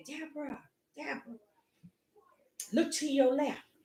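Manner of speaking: very soft, small, quiet inner voice. Recounting a race, the speaker quotes the voice that spoke to her: small quiet voice. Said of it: "small voice, quiet voice said to me".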